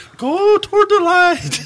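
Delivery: put-on tiny old woman's voice, very high and slow. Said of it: "this little old woman's voice saying".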